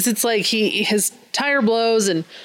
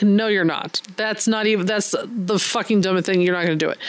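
ordinary talk, nothing marked

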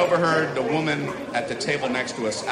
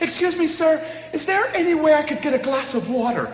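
very high, meek, unassuming, annoying put-on voice; 3 dB louder than usual. Retelling how a woman at the next restaurant table asked the waiter, imitating an annoying voice. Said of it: "your voice is annoying lady".

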